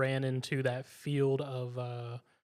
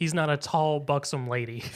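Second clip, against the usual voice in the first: ordinary talk, nothing marked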